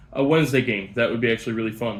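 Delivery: speaking up.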